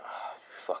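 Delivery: soft, quiet whispered delivery.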